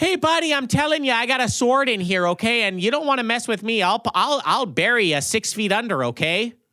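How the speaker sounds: everyday put-on Midwestern twang. Acting out a guy with a sword, in a standard Midwestern accent. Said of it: "standard ass Midwestern accent".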